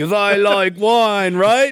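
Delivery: awful put-on British accent. Imitating Josh Hartnett's character going undercover: Josh Hartnett doing awful British accent. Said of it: "your Josh Hartnett talking like a British person impersonations".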